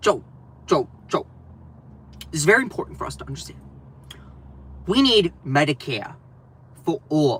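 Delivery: serious, grave, solemn politician-style voice. Doing a not-so-good impression with hands up, looking serious: Bernie Sanders impression. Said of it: "I've also been working on a Bernie Sanders impression".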